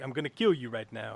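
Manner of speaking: cool, calm, menacing voice. Describing the actor's usual movie persona: cool, calm Charles Bronson voice. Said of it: "the cool, calm".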